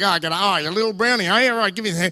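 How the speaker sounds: put-on tough-guy voice. Retelling how tough uncles greeted a child with handshakes: imitating a tough uncle. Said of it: "They're just like".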